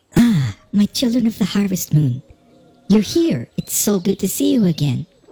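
cute female fantasy game-character voice. Running the game, the speaker voices a character who greets the players: female character voice. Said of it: "I have a quest for you".

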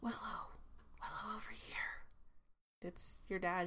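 hushed whisper. Willow's father calls her over, whispering. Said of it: "he whispers".

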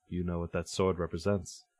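distant, far-off voice. As someone tugs at a sword, a voice speaks from afar: distant voice. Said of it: "you can hear a distant voice".

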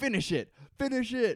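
screaming. Retelling a scene where Sawyer screams as Locke's dad reads, imitating Sawyer screaming. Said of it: "Sawyer starts screaming".

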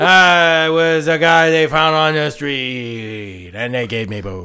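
put-on loud, drunk-sounding baby voice. Mimicking the bad voice acting of a game: drunk baby Doctor Wily voice. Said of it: "He sounds like a drunk baby".

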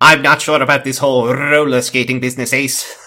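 loud with rolled R's. Speaker performs a line as the Doctor with a rolled R, Doctor voice with rolled R. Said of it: "a rolled R of the doctor".

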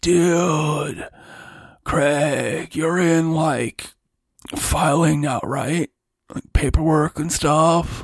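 stoner slacker drawl with "dude" stretched out. Blaze pulls Craig aside in the staff room: stoner Blaze voice. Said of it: "His name is [name]. Oh, he could be a Magman. / you gotta lay off the jazz cabbage when you're working".

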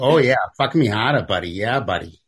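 put-on New England accent. Joking with friends about hardcore audio, imitating it in a new england accent. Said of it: "with New England accents".

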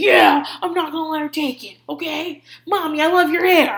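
high, pushy, combative, put-on tough-guy talk. Quoting the boy who calls her mommy, imitating his aggressive way of talking. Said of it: "aggressive way of talking all the time".

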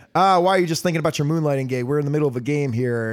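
normal talking voice

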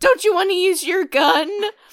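unhinged, loud, high voice pushed until it cracks. Retelling a film scene where he yells: imitating Nicolas Cage's voice breaking. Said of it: "his voice breaks".

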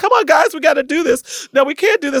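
very high, tearful, crying voice. Speaker retells urging a staff meeting early on, retelling a tearful plea. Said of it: "And I'm crying".

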